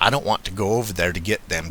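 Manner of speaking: ordinary delivery, nothing marked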